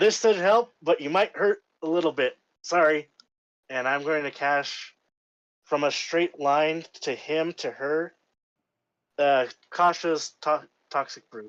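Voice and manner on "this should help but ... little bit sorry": loud called-out yelling. Calling out in character to a trapped jailer: yelling in character. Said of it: "I'm gonna yell to him".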